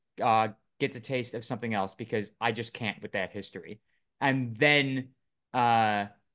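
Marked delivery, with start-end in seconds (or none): none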